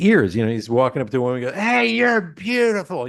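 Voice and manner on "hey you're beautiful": put-on drunk voice, very high screaming. Recalling a drunk guy at a comedy gig screaming at women: imitating a drunk man screaming. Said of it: "he's screaming at the top of his lungs".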